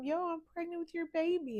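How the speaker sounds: bursting with excitement. Retelling telling him at the jail about the pregnancy: retelling an excited announcement. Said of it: "And I'm just, like, excited".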